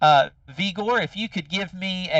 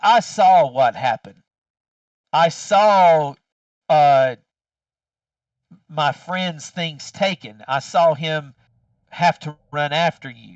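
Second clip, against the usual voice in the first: scornful, sneering cat voice, words drawn out; 3 semitones lower, 5 dB louder than usual. Voicing an insect cat telling a player what it saw: disdainful cat voice. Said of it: "he got a lot of disdain in his cat voice".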